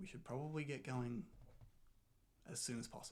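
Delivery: hushed undertone, half-whispered. Playing a scene with others, half-whispering. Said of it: "in undertones, whispering to you, says".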